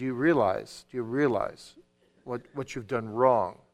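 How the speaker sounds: calm, earnest, softly spoken voice. Showing how to speak one-on-one to a child about a wrong: calm but earnest. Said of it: "in a calm but earnest voice".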